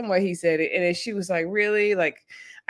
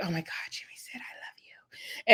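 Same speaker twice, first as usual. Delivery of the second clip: hushed, breathy whisper; 7 dB quieter than usual. Retelling how Chelsea told Laura the news: imitating Chelsea whispering. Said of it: "she whispered to her".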